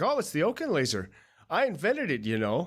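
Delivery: swooping, animated, boastful gung-ho scientist voice. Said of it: "he's all gung-ho about it".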